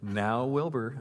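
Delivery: even, composed, calm, collected voice. Recalling how she stood up to Dad when he got loud: retelling a calm, collected voice. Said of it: "that calm, collected voice".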